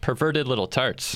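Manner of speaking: emphatic delivery, hard stress on "perverted".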